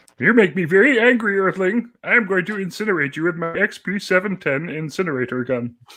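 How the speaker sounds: high-pitched put-on cartoon alien voice. Asked to do the voice, threaten an Earthling in a Marvin the Martian voice. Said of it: "to do the Marvin the Martian voice".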